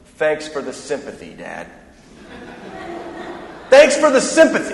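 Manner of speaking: acted, dripping, heavy sarcasm, sing-song. A father retells his daughter's reply to his help: retelling a very sarcastic reply. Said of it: "Very sarcastic".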